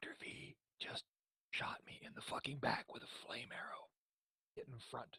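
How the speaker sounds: very hushed stage whisper, meant to carry. Player in a game session, stage whisper to Corvo. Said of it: "stage whisper to Corvo".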